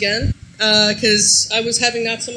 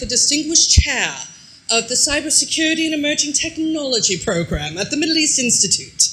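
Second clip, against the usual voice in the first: put-on grand upper-class posh accent; 3 semitones higher than usual. Reading out a fancy title, put-on posh accent. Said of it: "I always have to say with a posh accent".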